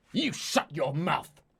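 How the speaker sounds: sibilant, hissing delivery. A narrator reads the birdman's reply to the agitated birdmaid, hissing back. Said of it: "the birdman hisses back".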